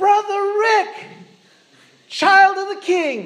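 mock very high, booming, loud, drawn-out yell. Retelling how a fellow believer at church called out to him: loud Gregory-voice yell. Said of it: "he yells out in this loud Gregory voice".

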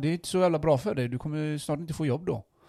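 joking, teasing. Retelling what he said to a man about automation: retelling a teasing joke. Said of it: "jag skojar ju bara med han".

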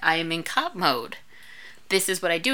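ordinary talk

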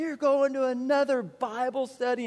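mock agitated, freaked-out yelling outburst. Retelling leaving for Bible study every night: imitating dad yelling. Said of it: "my dad would just start yelling at me".

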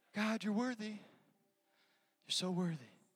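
meek, soft, timid, hushed voice. Showing how a soft praise to god sounds: mock soft praise. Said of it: "a soft praise to God".

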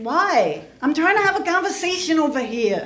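put-on brash New York attitude. Retelling answering peacekeepers who told the speaker to leave, mock New York City attitude. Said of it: "I got all New York City on them".

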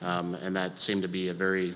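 very soft, quiet delivery. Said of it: "I speak very softly".

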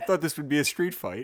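attempted put-on British accent. Retrying the film quote in a British accent. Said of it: "That was pretty good".

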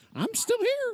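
very high-pitched little cartoon mouse squeak voice. Imagining how the heard voice might have sounded: Mickey Mouse voice. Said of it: "did he say it like in the voice of Mickey Mouse?".

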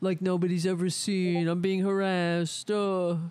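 mock whiny imitation. Mocking a man who complains of persecution: mocking whiny imitation. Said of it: "that's a whiny little bitch".

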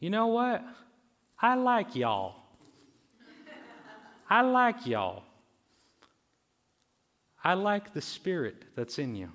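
put-on heavy, laid-on-thick Southern accent with swooping pitch. Retelling what a visitor from Tennessee said after prayer: thick Southern accent. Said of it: "with this very thick and Southern accent".

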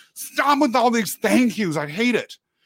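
play-acted cross irritation. Retelling what she said outside her office: imitating someone angry. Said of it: "She was angry at me".

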